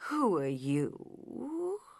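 drowsy, drawn-out, slow, soft sleepy voice. Reading the story, the narrator voices a character questioning Alice in a slow, sleepy voice. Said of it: "in a slow, sleepy voice".

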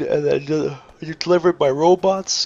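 mid-yawn. Narrating a build late at night, yawning. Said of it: "Excuse me for yawning".

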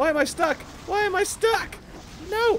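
panicked, yelling voice.

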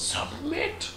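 very high, soft mock villain yell. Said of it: "pops up and yells".

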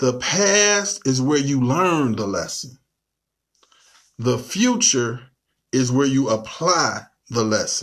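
very slow, deliberate delivery, "past" stretched out. Teaching tonight, telling listeners to write this down: very slow. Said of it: "I'm going to say this real slow".

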